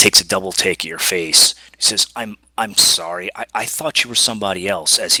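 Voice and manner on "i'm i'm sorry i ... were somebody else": put-on apologetic, sorry-sounding teenage boy voice. After a double take at your face, a teenage boy apologizes; apologetic teenage boy. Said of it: "he kind of begs your pardon".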